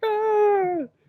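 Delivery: very high, pained yelp. Retelling how a grown man reacted to a needle: imitating a man crying out. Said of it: "he cries, like".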